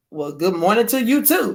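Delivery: normal talking voice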